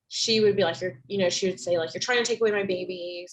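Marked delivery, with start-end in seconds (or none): 1.9-3.3 mock bitter, angry, accusing outburst. Retelling what a mother in their care would say, imitating her very angry. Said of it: "she would kind of be very angry with me".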